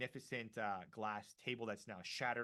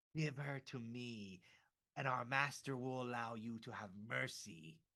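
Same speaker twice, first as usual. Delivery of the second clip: hissed, creature-like vampire voice. Retelling a story, the speaker voices the vampire creature: hissing vampire voice. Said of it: "and it kind of like hisses".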